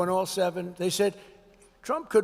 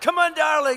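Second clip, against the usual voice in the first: wild, all-out, frantic scream, acted, high and loud; 8 semitones higher, 5 dB louder than usual. Retelling a mother cheering her weightlifting child: imitating a mother screaming wildly. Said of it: "The mother's screaming like crazy".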